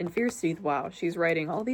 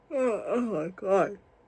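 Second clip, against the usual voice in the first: very slow, drawn-out words through a yawn. Recording a video late at night, yawning. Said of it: "I'm sorry I keep yawning".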